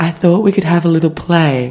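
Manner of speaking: unsettling, sinister, creepy put-on voice. Retelling what a date said to the speaker, imitating a creepy voice. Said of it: "in the creepiest voice I've ever heard".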